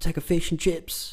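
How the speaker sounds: put-on Australian accent.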